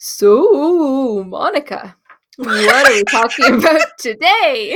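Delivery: loud, bad spooky voice, "so" drawn out. Opening the conversation with Monica, in a mock spooky voice. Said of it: "That was supposed to be me being like spooky".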